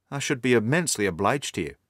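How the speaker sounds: usual speaking voice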